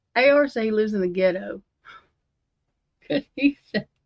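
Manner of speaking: laugh held back, fighting off a giggle. Telling Heather what A R said, holding back a laugh. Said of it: "I'm trying not to laugh".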